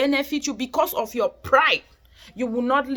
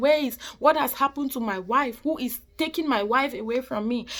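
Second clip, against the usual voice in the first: put-on voice of a man crying; 4 dB quieter than usual. Preaching about suffering people, acting out a man's words: imitating a man crying. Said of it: "hears that man crying".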